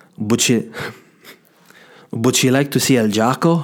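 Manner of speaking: put-on Spanish-accented voice. Retelling what the guy said while serving starters: imitating the Spanish guy. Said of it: "whenever he said it like that".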